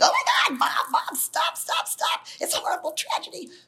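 put-on, high-pitched screaming four-year-old voice. Retelling how a son screamed from the back seat: imitating a child screaming. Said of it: "my older son starts screaming".

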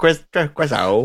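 put-on stammering voice. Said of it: "Trevor's like".

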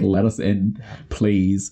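very slow, drawn-out, dragged-out begging tone. Retelling a movie scene of people at train windows: imitating people begging. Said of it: "begging to be let in".

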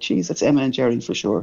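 ordinary delivery

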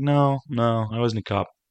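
slow, lackadaisical, easygoing drawl, full of charm. Retelling a teaser scene where he denies being a cop: Channing Tatum's lackadaisical charming voice. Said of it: "Channing Tatum's kind of lackadaisical, charming man thing".

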